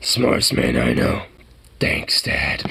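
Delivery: gritted-out, gruff and creaky voice. Repeating a line in a gruff Clint Eastwood voice. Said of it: "like a Clint Eastwood gruff voice".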